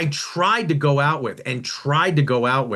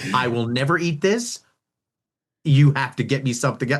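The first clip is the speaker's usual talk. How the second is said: mock sassy, flat delivery. Retelling how a young daughter refused sushi: imitating a sassy daughter. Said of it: "she looked up".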